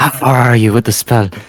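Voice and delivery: hushed voice. A player's invisible character sneaks up and asks another character, quietly. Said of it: "quietly suddenly ask him".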